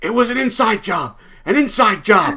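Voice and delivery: very high-pitched scream in terror. Narrating a game, the speaker voices a questioned man answering the players: screaming. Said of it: "he's screaming at this point".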